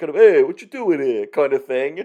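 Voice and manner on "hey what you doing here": put-on broad New York or Jersey accent, raised voice. Describing a cartoon character's voice, speaker demonstrates a broad new york accent. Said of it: "broad kind of New York or New Jersey accent".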